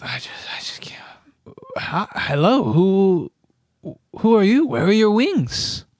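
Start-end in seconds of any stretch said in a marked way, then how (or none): 0.0-1.0 muttered under the breath, quieter. A game master voices the half-orc as he is muttering under his breath. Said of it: "muttering under his breath".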